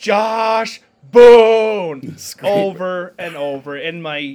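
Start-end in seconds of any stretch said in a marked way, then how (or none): 0.0-2.2 very loud, high holler with drawn-out name. Retelling yelling a player's name from the stadium railing; retelling own yelling. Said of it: "I just started yelling".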